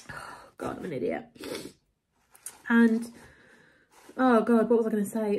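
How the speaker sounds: soft speech through tears, voice breaking. Speaker apologizes to listeners mid-story, crying. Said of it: "I can't stop crying. I'm sorry".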